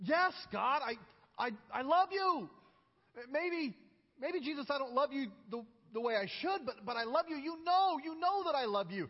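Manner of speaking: fed-up, exasperated, halting, tripping over words. Retelling Peter answering Jesus the third time, imitating exasperated Peter. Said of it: "I can almost hear the exasperation in Peter's voice".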